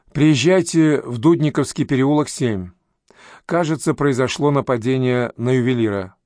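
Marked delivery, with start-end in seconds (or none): none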